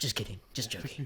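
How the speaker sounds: put-on weird Northern English voice. Retelling a moment from the trailer, imitating Jeffrey's weird off-putting voice. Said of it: "And then he goes".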